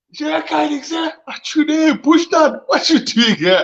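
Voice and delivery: high-pitched, slow, excited delivery.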